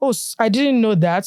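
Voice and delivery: dry, sarcastic tone, acted out. Retelling a comeback to a commenter: retelling own sarcastic reply. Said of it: "sarcastic comment".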